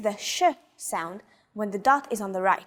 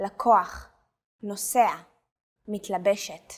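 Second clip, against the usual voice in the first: each word stressed on its second-to-last syllable. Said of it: "the stress is on the second to last syllable".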